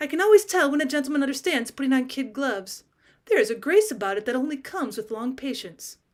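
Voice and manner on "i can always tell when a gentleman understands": plain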